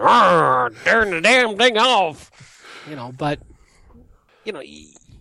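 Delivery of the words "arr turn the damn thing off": put-on slow, loud, crotchety grumpy old man voice. Admitting he sounds like a grumpy old man, doing a mock grumpy old man voice. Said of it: "I'm sounding like a grumpy old man".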